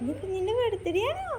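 put-on high, soft, gentle coaxing baby talk, cooed.

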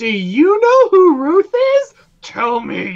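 very high, loud, bouncy sing-song voice. Picturing Dora the Explorer walking out on screen: Dora the Explorer voice. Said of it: "Dora Explorer walks out on screen".

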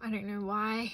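soft, breathless, out of breath voice.

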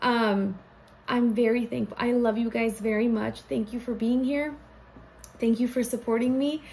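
close to crying, rushed, pouring out gratitude. A creator thanks viewers at the end of the video intro, on the verge of tears. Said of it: "I feel like I'm gonna cry".

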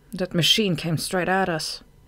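ordinary delivery

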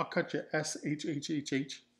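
plain

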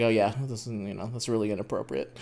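put-on mutter under breath. Retelling what a man's brother said, retelling a mutter under breath. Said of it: "his brother under his breath goes like".

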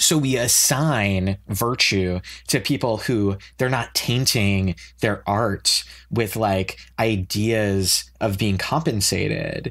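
slow, dripping sarcasm. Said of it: "the sarcasm dripping off of my voice".

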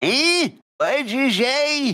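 put-on high-pitched, loud, ancient old lady voice. Someone says excuse me to a very old squirrel in her rocking chair: very old squirrel voice. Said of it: "very old squirrel just in her rocking chair".

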